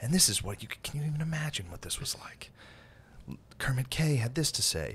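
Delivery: theatrical, hushed, suspense-building storyteller narration. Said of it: "He amps it up".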